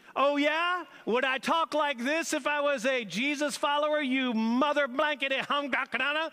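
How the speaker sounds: high-pitched, spat-out mock rant. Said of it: "he began to say bad words and swear".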